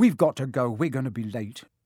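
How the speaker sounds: ordinary delivery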